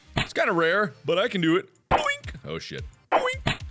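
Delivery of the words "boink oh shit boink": very high-pitched, silly squeaky voice. Playing a game and landing hits in a row, in a high-pitched voice. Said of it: "(high pitched)".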